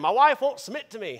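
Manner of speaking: loud, high put-on backwoods country accent. Imitating upset men complaining about their wives: imitating a country accent. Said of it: "usually in a country accent".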